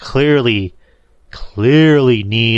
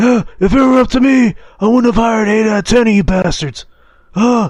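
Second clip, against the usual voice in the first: throat-straining put-on voice, higher; 12 semitones higher than usual. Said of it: "That hurts trying to do that voice".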